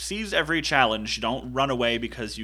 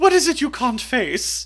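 put-on British accent, pitched very high and loud; 13 semitones higher, 8 dB louder than usual. Quoting a favorite line, in Mother Abbess's British accent. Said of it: "in her British accent goes".

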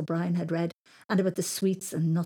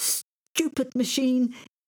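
frustrated, seething, high, angry hiss; 6 semitones higher than usual. A man kicks a washing machine whose door won't open, hissed. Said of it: "He hissed".

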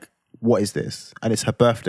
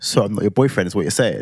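ordinary talk

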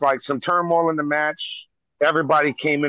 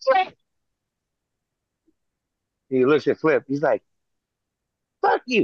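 usual speaking voice

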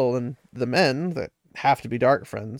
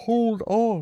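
strained, effortful voice, pitched up; 8 semitones higher than usual. The Ogier grabs a Trolloc's arm holding a man off the ground, strained voice. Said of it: "Loyal's voice sounded strained".

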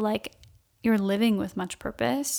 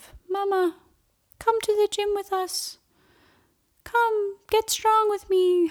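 put-on tiny, silly, very high little baby voice; 10 semitones higher than usual. Retelling how he came in holding the baby and spoke in a funny little voice. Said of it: "did this funny little voice of".

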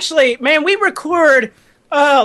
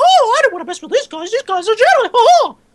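high, squeaky little cartoon mouse voice; 9 semitones higher than usual. Joking about what Mickey Mouse would say after getting the video, Mickey Mouse impression. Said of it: "Was that Mickey Mouse?".

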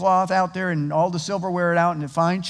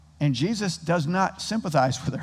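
ordinary talk

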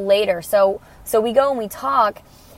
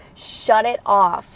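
usual speaking voice

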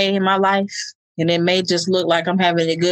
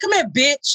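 put-on harsh angry tone, higher; 7 semitones higher than usual. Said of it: "It's the tone".

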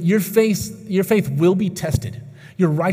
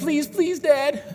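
put-on high little kid's voice, begging and pleading; 9 semitones higher than usual. Retelling a two-and-a-half-year-old son asking for a treat: imitating a begging child. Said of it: "he just kind of begs".

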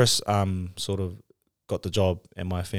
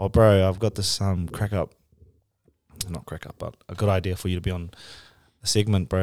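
normal talking voice

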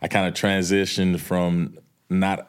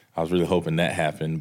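plain

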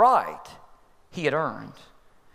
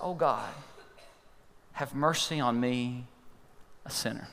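mock-pained, pleading, prayer-like tone, quieter and slower; 3 semitones lower, 9 dB quieter than usual. Preaching, retelling a man's prayer for mercy, acting out a pained plea. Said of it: "You could almost hear the pain in his voice".

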